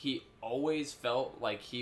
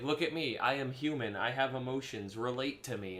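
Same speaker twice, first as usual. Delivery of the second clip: ordinary talk, nothing marked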